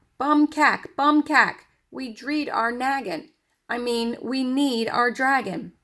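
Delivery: tiny, high-pitched, excited screaming voice. Reading a story aloud, a voice calls out as the father and dragon pass: tiny, excited screaming voice. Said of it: "a tiny, excited voice scream".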